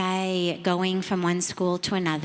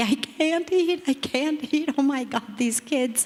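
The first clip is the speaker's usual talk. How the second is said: high-pitched, sobbing outburst, crying through words; 7 semitones higher than usual. Retelling refusing dinner after visiting slums: imitating own past sobbing. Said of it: "I'm sobbing uncontrollably".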